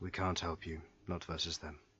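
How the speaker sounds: dejected. Voicing a captured goblin who sighs and refuses to help: defeated. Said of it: "He sighs, very defeatedly".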